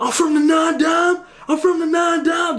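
put-on screaming. Describing a guy partying by himself over there: imitating someone yelling. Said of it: "Over there yelling".

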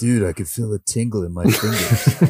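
laid-back, chill surfer-bro voice. Retelling how a drinking elf talks once alcohol hits him, in his bro voice. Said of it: "in his bro voice".

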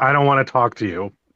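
ordinary delivery

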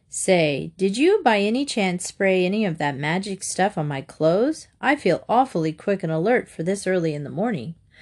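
plain

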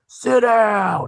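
piercing, very loud shrill yell, falling and stretched out. Retelling what a season ticket holder behind them said: imitating someone yelling. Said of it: "he's yelling".

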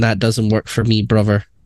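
normal talking voice

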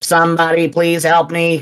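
level, flat, mechanical robot monotone. Game master voicing a statue speaking to the players: very robotic voice. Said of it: "another very robotic voice that says".

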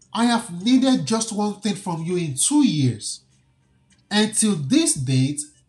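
ordinary talk

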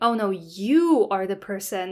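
stress on "you". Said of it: "my emphasis on the you is also part of the prosody".

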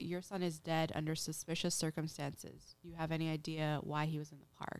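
ordinary talk

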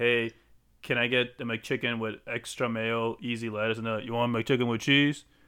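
normal talking voice

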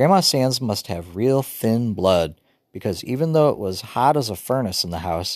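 plain

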